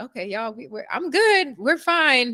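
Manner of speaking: choked-up, tearful voice. Retelling getting emotional while teaching a class: imitating own choked-up voice. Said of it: "my voice start getting all choked up".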